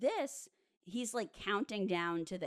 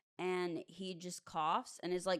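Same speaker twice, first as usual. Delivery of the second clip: usual speaking voice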